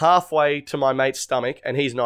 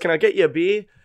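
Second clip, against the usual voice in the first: put-on friendly bloke voice, higher; 4 semitones higher than usual. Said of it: "really nice to Danny".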